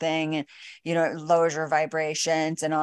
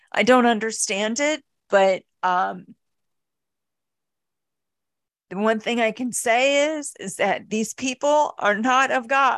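moved, heartfelt, emotional voice, pitched up; 6 semitones higher, 3 dB louder than usual. Telling another speaker about what made them sob: getting emotional. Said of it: "I'm getting emotional now".

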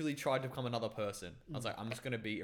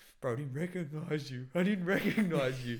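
spooked, raised, scared-sounding voice; 4 semitones higher, 7 dB louder than usual. Retelling what a friend said once he broke character: imitating a scared friend. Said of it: "and he got scared".

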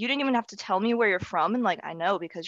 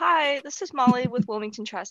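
mock recorded-message voice, higher in pitch; 3 semitones higher than usual. Acting out own recorded work voicemail greeting: imitating own voicemail greeting. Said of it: "It's gonna be my work voicemail".

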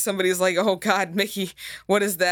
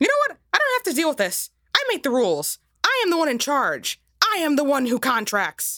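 put-on cartoon mouse voice; 9 semitones higher than usual. Playing a cartoon mouse refusing to answer: Mickey Mouse voice.

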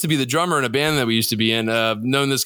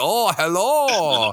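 over-the-top put-on Korean accent, drawn-out "hello"; 5 semitones higher than usual. Recalling a voice once thought to be someone faking an accent: racist korean accent. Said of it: "making like a racist Korean accent".

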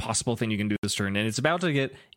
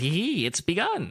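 put-on sneaky, sinister villain voice, pitched up; 6 semitones higher than usual. Narrating a story where George twiddles his hands, George villain voice. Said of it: "I gave him a villain voice there".

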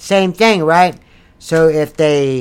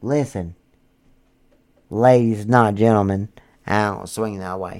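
put-on seductive voice, very low and soft; 8 semitones lower, 7 dB quieter than usual. Putting out a profile message addressed to the ladies, in a fake sexy voice. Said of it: "Let me sound sexy for a second".

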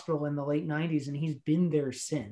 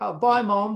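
put-on brief Australian accent, dropped straight after; 5 semitones higher, 6 dB louder than usual. Discussing the characters' accents, the speaker quotes Cody in Cody's Australian accent. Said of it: "Cody starts out having an Australian accent".

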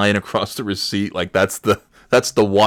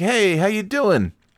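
put-on, very high, forced, fake cheerful voice; 11 semitones higher than usual. Acting out walking right up to the guy with a fake happy greeting. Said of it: "I'll put on a happy face".

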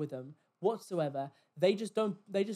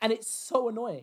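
plain

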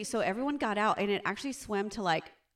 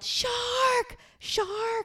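put-on, very high, alarmed yell. Retelling spotting a shark near people in the water; retelling a yell. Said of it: "I yelled".

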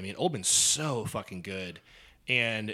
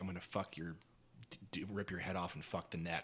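imitated menacing whispers, lower and quieter; 4 semitones lower, 12 dB quieter than usual. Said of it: "just whispers shit in their ear".

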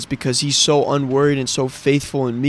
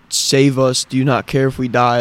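ordinary talk, nothing marked

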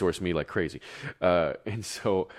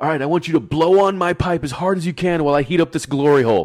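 shrill, very loud, high-pitched scream; 11 semitones higher, 10 dB louder than usual. Retelling a show scene where a glassblower screams at an understudy: imitating a man screaming. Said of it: "he's just screaming at him like".

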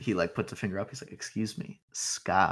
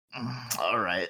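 put-on drunken man character voice; 3 semitones higher than usual. Voicing a drunk guy who stumbles up to the table: drunk guy voice. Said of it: "you can tell he's, like, very drunk".

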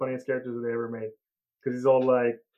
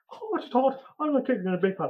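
very high, swooping leprechaun character voice; 11 semitones higher than usual. Quoting a favorite cartoon leprechaun's line: imitating the leprechaun character. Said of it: "He's always like".

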